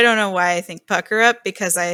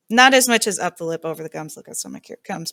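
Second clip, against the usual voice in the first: quick, fast, mumbled mutter under the breath; 4 dB quieter than usual. Recalling a rhyme said before taking cough syrup, quickly under the breath. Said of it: "You just said that really quickly under your breath".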